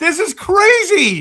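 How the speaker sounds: loud, worked-up excited yell, crazy drawn out. Reacting to a trade involving a fourth overall pick: yelling, excited. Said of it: "I'm sorry if I'm yelling".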